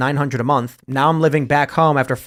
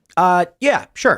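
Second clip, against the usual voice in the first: put-on hesitant robot voice with fake stutter, higher; 4 semitones higher than usual. Retelling what the ai robot said: imitating an ai robot with fake stutter. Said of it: "it has a fake stutter".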